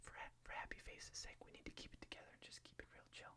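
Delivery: fast, rushed, very soft hushed whisper. Talking to viewers while a baby sleeps nearby, whispering. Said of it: "We're just gonna talk like this".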